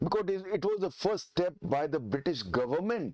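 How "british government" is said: heavy emphasis placed on British government. Explaining the Regulating Act of 1773: stress on BRITISH GOVERNMENT. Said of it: "I'm stressing the word British government".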